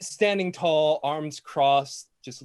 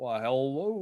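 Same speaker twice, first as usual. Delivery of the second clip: cartoon rooster voice with Kentucky accent; 4 dB quieter than usual. Voicing a character greeting the party: Foghorn Leghorn voice. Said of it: "Foghorn Leghorn".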